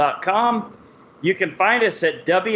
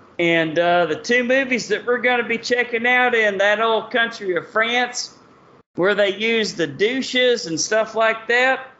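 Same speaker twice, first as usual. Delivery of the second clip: put-on Texan twang, pitched up; 5 semitones higher than usual. A show host announces the next show in france, in a texas accent. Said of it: "my Texas accent".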